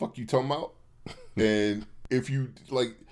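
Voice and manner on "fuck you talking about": very fast, rushed, words rattled off in blur. Retelling how a man says a line, saying it really quickly. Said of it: "he says really quickly".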